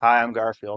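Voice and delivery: plain natural speaking voice, no character. Joking about an actor's roles, doing Garfield as Chris Pratt. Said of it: "I'm gonna play as Garfield as Chris Pratt".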